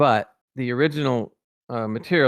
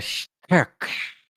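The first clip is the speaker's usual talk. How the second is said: weird, snake-like put-on voice; 7 semitones higher than usual. Retelling how a character talked, in a weird snake-like voice. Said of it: "he talked in that weird snake like snaky kind of voice".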